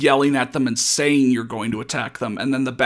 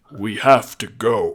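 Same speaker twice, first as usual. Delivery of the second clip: heroic robot leader voice, lower and louder; 2 semitones lower, 3 dB louder than usual. In a group role-play game, a player speaks as the leader in an Optimus voice. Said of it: "I'll be Optimus".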